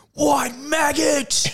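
shrill, very high screaming. Retelling a bloke beside them at the football: imitating a bloke screaming. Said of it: "some bloke sitting next to us just screaming".

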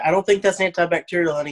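ordinary talk, nothing marked

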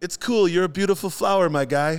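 put-on high called-out yell. Telling a story, the speaker repeats what a stranger yelled at them, imitating a stranger yelling. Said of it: "I hear this guy yell".

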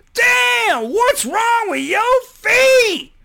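shrill shriek, very high and very loud. Retelling a woman's reaction to the speaker's feet: imitating a woman screaming. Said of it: "just screamed".

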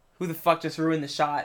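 plain

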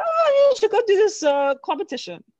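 put-on Brazilian accent, very high and very loud. Quoting a Brazilian professor's suggestion to the speaker, imitating his Brazilian accent. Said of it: "More or less his accent".

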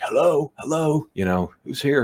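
play-acted shrill, very high-pitched yelling. Retelling calling out to someone walking upstairs: retelling own screaming. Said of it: "I'm screaming, like".

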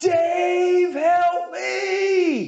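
mock very high scream, "me" stretched out. Retelling how a companion screamed from behind: imitating George screaming for help. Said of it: "I hear George behind me screaming".

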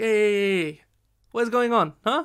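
drawn-out, high hey in dad voice. Retelling his dad stepping into an argument out of the blue, imitating father's accent. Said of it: "with his accent".

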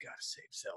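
soft, breathy whisper. Describing an old game character on her tower of pillows: Lady Impa voice. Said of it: "Lady Impa sounds just like that".

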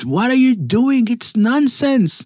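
high-pitched, shrill, upset screaming. Retelling how an upset doctor screamed at a family: imitating someone screaming. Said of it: "as he screams at them".

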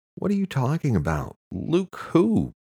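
very high, swooping, whining voice. Questioned by another woman about a man, she answers: whining. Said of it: "Chastity whined".

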